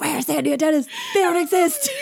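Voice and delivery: put-on hissing whisper. Recalling what someone said during the movie's first scene, retelling a hissed whisper. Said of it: "Grace leaned over and hissed".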